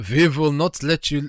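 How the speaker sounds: put-on German accent. Repeating a character's line after remarking on the accent: imitating a German accent. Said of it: "That accent".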